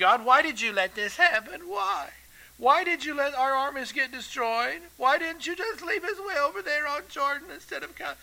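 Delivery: mock nagging, high, whiny complaint. Speaker acts out a man in distress blaming God, imitating a whining voice. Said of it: "You hear the whining in his voice?".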